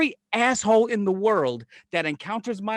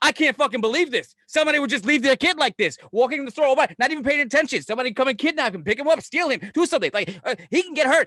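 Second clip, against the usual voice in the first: mock outraged, indignant rant making a scene; 4 semitones higher than usual. Retelling how she makes a scene at the store, imitating her indignant rant. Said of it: "she starts making a fucking scene".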